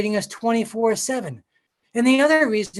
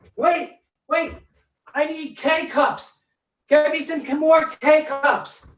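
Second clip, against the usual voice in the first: high-pitched calling out; 5 semitones higher than usual. Speaker calls to his wife through a door, shouting. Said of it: "why I'm shouting at my wife to a door".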